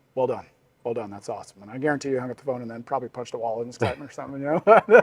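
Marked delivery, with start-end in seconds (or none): 0.2-1.6 restrained, understated, stoic, reserved approving tone. Retelling his dad's reaction on the phone to the big news: imitating dad's stoic voice. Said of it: "very stoic in how he speaks".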